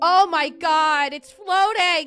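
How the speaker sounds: ear-splitting, loud, high-pitched shriek of fright. Reacting to something caught on a security camera, with a loud scream. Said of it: "Sorry if that hurt anyone's ears".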